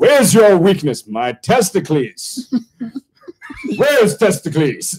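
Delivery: high, put-on old English accent, American-tinged. An American speaker does a comic bit asking about a weakness, old English accent. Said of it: "I'm doing like an old English accent".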